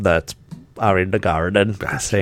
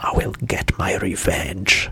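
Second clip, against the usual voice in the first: whispered muttering under the breath; 4 dB quieter than usual. Retelling a child muttering a threat after losing an argument: imitating her muttering. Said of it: "I hear her muttering to herself".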